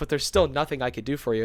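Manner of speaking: usual speaking voice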